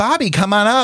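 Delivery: very high-pitched, inviting, calling-out voice. Retelling being called on stage: imitating Nina West's voice. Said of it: "That was the perfect Nina voice".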